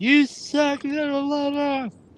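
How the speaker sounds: put-on very high, jeering, bratty kid's shout. Retelling what an annoying kid in the crowd screamed: imitating a kid yelling. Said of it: "annoying kid yelling, screaming".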